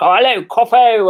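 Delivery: loud, ridiculously exaggerated posh upper-class accent. Imitating the speaker's very posh boyfriend, exaggerated posh accent. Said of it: "when I start doing a weird voice when I'm talking about my boyfriend, um, it's because he's like ridiculously posh".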